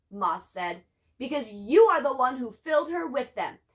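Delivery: ordinary delivery, nothing marked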